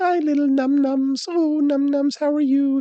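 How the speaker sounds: put-on very high baby talk. Showing how an owner talks to a cat: high-pitched cat-directed tone. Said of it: "If you talk like that to the cat".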